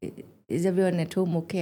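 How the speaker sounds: ordinary delivery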